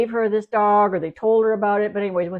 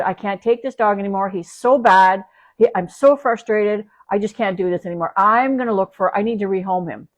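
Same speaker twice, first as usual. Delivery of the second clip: mock fed-up, overwhelmed, desperate, frustrated venting. Retelling what a dog's owner said at the door, acting out her frustration. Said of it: "let me show you what she was uh".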